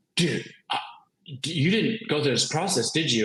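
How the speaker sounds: mock panicked, alarmed voice. Retelling a book rep's phone call to you: mock-panicked rep. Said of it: "he's like panicking because he's like".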